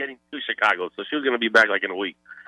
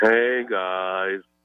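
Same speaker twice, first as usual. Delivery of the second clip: mopey cartoon donkey voice, lower; 5 semitones lower than usual. Greeting the hosts on a phone call: sounding like Eeyore. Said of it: "Why do you sound like Eeyore".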